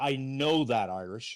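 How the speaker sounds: harsh, terse, slow, hard-edged tone. Speaker quoting what Kenzie said to them during a call, retelling a harsh, terse reply. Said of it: "a very harsh, terse tone".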